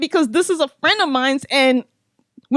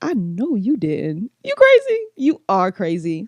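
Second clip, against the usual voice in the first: low, slow mock talk broken up by laughter; 5 semitones lower than usual. Retelling laughing at a man who threw a chair: retelling laughing while talking. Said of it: "So I started laughing".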